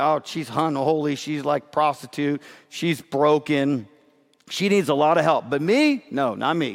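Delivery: ordinary delivery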